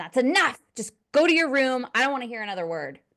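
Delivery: put-on sharp snap, swooping in pitch. Retelling a mother losing patience with her child: imitating a mother snapping. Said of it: "she's snapping at him".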